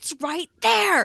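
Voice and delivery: shrill, very high-pitched scream. Retelling what they shout at the TV during a mystery: imitating own screaming at TV. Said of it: "I'm screaming at my T V going".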